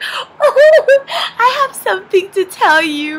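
acted giggling, high-pitched and drawn out. Retelling a drive home, speaker quotes their mom, imitating mom giggling. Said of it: "my mom starts giggling".

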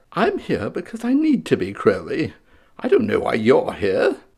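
amateurish put-on character voice, swooping and sing-song. Voicing a second pop vinyl figure answering: bad Aziraphale voice. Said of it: "bad voices".

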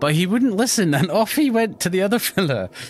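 put-on high, piping old-lady leprechaun voice. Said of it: "chicken lady leprechaun".

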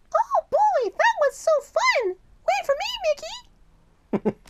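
very high, squeaky, swooping sing-song voice. Introducing each character in turn, now speaking as Minnie Mouse. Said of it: "here's Minnie Mouse".

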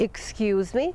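excuse me said with pitch rising low to high. Retelling how a woman said a phrase to an American: rising intonation on excuse me. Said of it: "С вопросительной интонацией. ... Как бы снизу вверх".

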